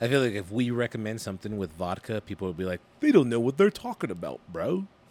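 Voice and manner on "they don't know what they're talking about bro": put-on, sing-song British accent. Quoting what people would say about their drink pick: put-on British accent. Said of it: "why did you go British?".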